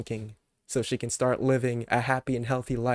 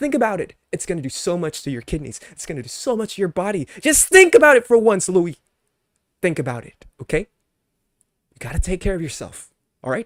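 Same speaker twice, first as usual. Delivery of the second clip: raised, pitched-up, increasingly mad angry rant; 6 semitones higher, 7 dB louder than usual. On his live stream, the speaker lectures Louis, getting mad. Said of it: "I'm getting mad in, in my live stream".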